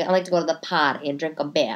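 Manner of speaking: put-on Boston accent. Mocking how someone from boston talks: imitating a boston accent. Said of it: "however the fuck they say".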